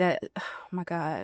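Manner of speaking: choked-up voice catching with emotion. Answering what their sixteen-year-old self would think: getting emotional. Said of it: "I'm trying not to get emotional".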